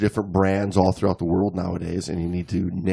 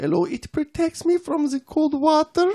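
very high-pitched put-on girly voice. Reading out a woman's reasons for liking dry suit diving, in a girl voice. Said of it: "your girl voice".

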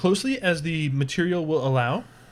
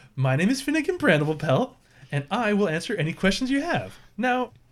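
bright cheerful halfling shopkeeper voice, higher; 4 semitones higher than usual. Voicing a halfling shopkeeper greeting customers: cheery halfling shopkeeper greeting. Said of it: "she gives you all a cheery".

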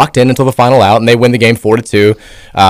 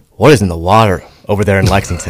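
put-on deadpan disbelief, mild-mannered, pitched lower; 3 semitones lower than usual. Retelling a commentator's reaction to a pitching change: imitating Sean's deadpan disbelief. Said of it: "he's like".

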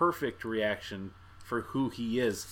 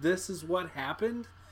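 high, stunned, disbelieving tone. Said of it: "sat there kinda like Dave with the thought".

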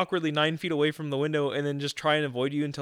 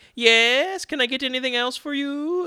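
put-on very high-pitched, slow old-movie lady voice; 10 semitones higher, 4 dB louder than usual. Complaining about a place, mimicking a lady there with a really high-pitched voice. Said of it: "with like the really high pitched voice".

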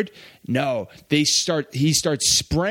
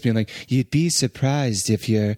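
very monotonous put-on voice; 4 semitones lower than usual. Recalling a vague line Whoopi Goldberg delivered, monotonous Whoopi Goldberg impression. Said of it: "very monotonous".

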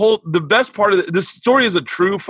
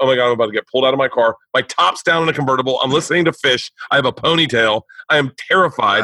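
normal talking voice

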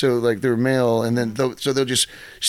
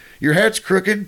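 put-on, pitched-up, called-out yell; 7 semitones higher, 3 dB louder than usual. Recounting calling out to a man while leaving; retelling a yell. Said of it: "I just yelled at him like I was leaving".

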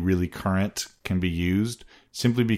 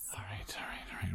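very soft, calming, soothing whisper. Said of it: "Calm down".

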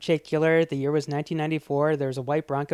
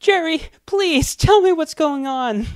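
put-on shrill, sobbing, tearful voice, high and raised; 12 semitones higher, 7 dB louder than usual. Retelling a film scene where she pleads: imitating Regina King crying.

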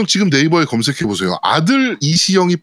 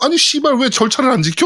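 put-on high, sneering, scornful tone; 6 semitones higher than usual. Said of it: "이러면서 빠졌어".

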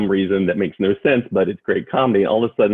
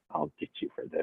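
put-on muttering under breath, lower and quieter; 5 semitones lower, 17 dB quieter than usual. Retelling a movie scene of a smiling threat: imitating muttering under breath. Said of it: "under her breath she goes".

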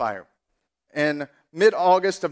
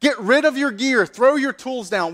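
put-on, high-pitched screaming; 8 semitones higher, 4 dB louder than usual. Retelling a leader ordering his firemen to drop their gear, retelling a scream. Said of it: "he screams to his firemen".

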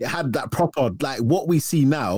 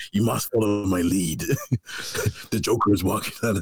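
put-on menacing superhero voice, lower; 4 semitones lower, 3 dB quieter than usual. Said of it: "his voice was so menacing".

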